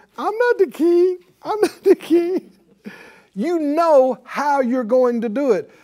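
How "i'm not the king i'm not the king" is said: put-on crying, high whimpering fake sobs. Imitating someone who starts crying instead of acting: mock crying. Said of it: "You don't start crying and going".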